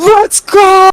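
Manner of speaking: high, loud, triumphant yell at top of lungs. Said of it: "I just yelled at the top of my lungs".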